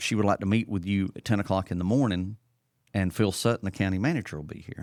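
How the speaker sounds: usual speaking voice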